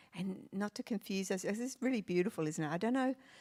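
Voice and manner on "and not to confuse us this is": ordinary delivery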